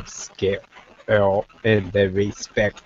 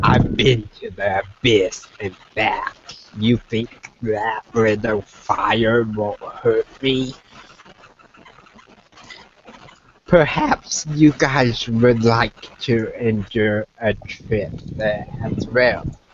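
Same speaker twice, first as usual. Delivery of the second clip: monster voice, words broken up by laughter. Voicing a nine-foot monster who laughs off the fire: laughing while speaking as the monster. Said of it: "he starts to laugh and says".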